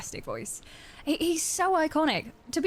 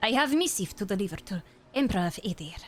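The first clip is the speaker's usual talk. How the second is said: put-on cat character voice. Reading a dialogue line in a game, channeling Puss in Boots voice. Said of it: "I'm channeling Puss in Boots".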